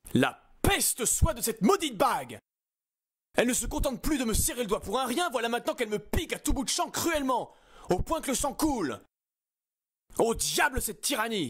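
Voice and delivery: furious, hot-tempered, very high and fast. Reading a story aloud, the narrator gives a prince's furious outburst. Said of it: "[name] se mit fort en colère contre la bague. / À quoi me sert d'être maître d'un empire si je n'ai même pas la liberté de battre mon chien? / [name] étant couché, / [name] se mit fort en colère contr".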